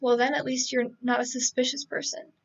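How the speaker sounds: usual speaking voice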